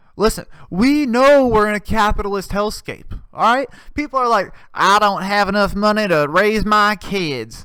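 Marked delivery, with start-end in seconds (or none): 4.7-7.6 put-on American Southern accent. Voicing what people say about raising kids, in a southern accent. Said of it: "I don't know why I did a fucking southern accent".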